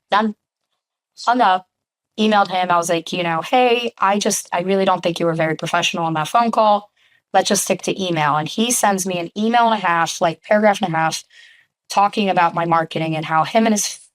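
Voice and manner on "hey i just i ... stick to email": usual speaking voice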